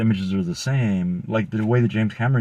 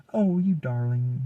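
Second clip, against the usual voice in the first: put-on southern belle way of talking; 4 semitones higher than usual. Retelling how a character talked: imitating a southern belle voice. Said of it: "kinda talking like a, like a Southern belle".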